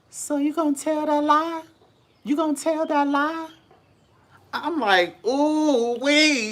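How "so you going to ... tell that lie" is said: put-on very high, sweet little elderly voice. Retelling a phone call, quoting an eavesdropping voice in the background: old sweet high voice. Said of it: "this old sweet high voice in the background say".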